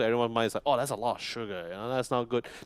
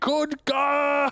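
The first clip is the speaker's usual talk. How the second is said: piercing, very high-pitched scream; 6 dB louder than usual. Imitating a game character screaming a name: imitating Tidehunter screaming. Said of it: "he's still screaming".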